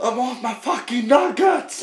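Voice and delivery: put-on shrill, very high-pitched shrieking scream. Retelling how he screams while waiting for his nuggets: retelling someone screaming. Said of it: "då sitter han och skriker".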